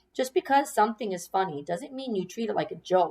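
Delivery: ordinary delivery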